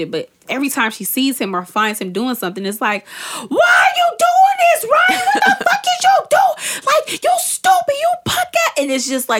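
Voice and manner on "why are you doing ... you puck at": play-acted, very high, drawn-out screeching yell. Acting out a woman on a show yelling at her cheating man, mock screaming. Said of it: "she's just screaming at him".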